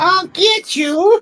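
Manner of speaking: very high cartoon skeleton villain voice. Friends compare voices, one urged to sound more like Skeletor; Skeletor voice. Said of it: "you got to be more like Skeletor".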